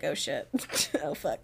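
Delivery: very low, soft, scared, hushed voice.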